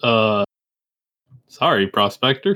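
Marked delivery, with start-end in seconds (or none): 1.5-2.6 indistinct, mumbled words. Voicing a character who just shot a zombie he knew: mumbling. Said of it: "he kinda mumbles".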